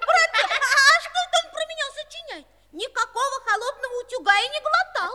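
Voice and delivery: indignant, high yelling. In a drama, a boy objects to his brother's rhyme about him, shouting in protest. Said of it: "Ты не кричи".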